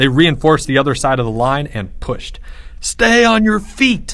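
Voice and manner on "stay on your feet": very high, drawn-out shouted cry. Leo props up Timmy amid a crushing fight, crying out over the roar. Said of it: "Leo cried over the roar".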